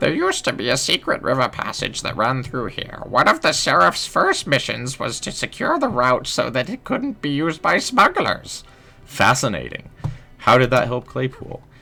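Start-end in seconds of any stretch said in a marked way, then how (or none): 0.0-8.7 put-on old lady voice. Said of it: "we're gonna keep going with the old lady voice".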